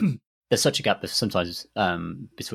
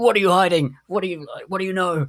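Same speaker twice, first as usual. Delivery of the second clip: very high, loud, accusing, interrogating shout; 11 semitones higher, 6 dB louder than usual. Retelling a game detective interrogating an old lady: imitating a character yelling. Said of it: "your character will just start yelling at her".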